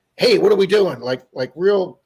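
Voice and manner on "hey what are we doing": very loud, forceful, raised calling-out voice. Retelling a police supervisor calling out from a car: imitating a forceful voice. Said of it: "real, you know, forceful".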